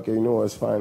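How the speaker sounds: ordinary talk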